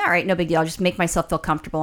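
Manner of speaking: ordinary talk, nothing marked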